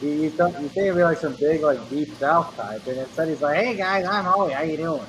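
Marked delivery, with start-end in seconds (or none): 3.6-5.1 nerdy, higher-pitched Midwestern guy voice. Describing a man whose voice doesn't match his posts, imitating Howie's Midwestern accent. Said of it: "like a nerdy Midwestern guy".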